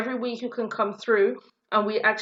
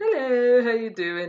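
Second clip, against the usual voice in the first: play-acted, sweet, innocent, butter-wouldn't-melt little voice. Mocking the sister's greeting as falsely innocent: mock innocent greeting. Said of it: "I don't even know who this innocency".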